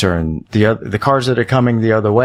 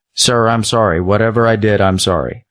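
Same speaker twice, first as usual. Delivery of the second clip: put-on very calm, even speaking tone. Retelling rolling the window down to another driver, retelling speaking very calmly. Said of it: "very calmly say".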